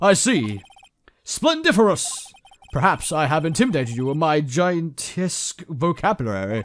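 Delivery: slow, showy put-on British accent, words laid out. Voicing a character who answers Mister Wright: British accent. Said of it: "I- I'm doing a British accent".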